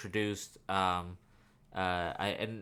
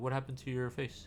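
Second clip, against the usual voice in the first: put-on childlike, simple little-kid voice; 4 semitones higher, 5 dB quieter than usual. Retelling a comic scene, voicing Killer Croc speaking like a child. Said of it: "speaking like a, like a child".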